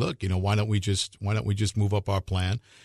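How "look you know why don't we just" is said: plain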